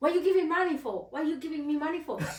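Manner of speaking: acted, furious, very angry tone. Retelling how a helper reacted to being handed money: imitating someone very angry. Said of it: "very angry and was like".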